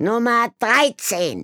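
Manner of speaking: piercing, very high, loud yell. Miss Kabankel calls out Number 13 a second time: shouting. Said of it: "schrie Miss Kabankel noch einmal".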